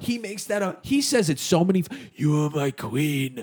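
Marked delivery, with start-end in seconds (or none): 2.1-3.4 slow, deliberate voice, every word drawn out. Retelling a TV scene where Jon repeats a line: Jon Snow impression. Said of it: "that's a pretty good impression".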